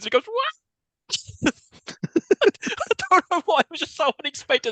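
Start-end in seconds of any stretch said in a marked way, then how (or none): 0.3-1.5 very high-pitched, small mock roar. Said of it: "He does his little roar".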